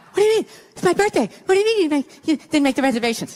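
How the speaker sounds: worked-up, agitated, disbelieving, upset tirade. Retelling how she reacted on her birthday morning, retelling her freaking out. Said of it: "She starts freaking out".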